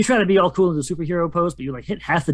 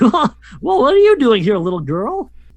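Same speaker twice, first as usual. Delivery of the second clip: big, goofy, high, swooping voice; 6 semitones higher, 6 dB louder than usual. Game master voices the monster addressing a little girl: very goofy Charles Entertainment Cheese voice. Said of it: "You hear a very goofy voice say".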